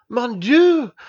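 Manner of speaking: very high-pitched, loud exclamation. A father sees his daughter suddenly hug the narrator, exclaiming. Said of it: "exclaimed Dr".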